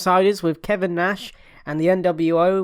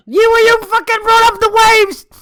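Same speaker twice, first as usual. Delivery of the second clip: shouting, higher and louder; 10 dB louder than usual. Arguing back after being told off for mentioning the ocean: yelling. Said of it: "why you gotta yell at the mic?".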